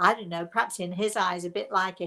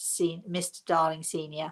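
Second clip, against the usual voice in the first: ordinary talk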